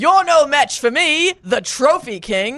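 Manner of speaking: light, mild mock yelling in game-character voice. Imagining what the listener would yell as a game NPC, mock yelling. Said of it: "and you're just yelling".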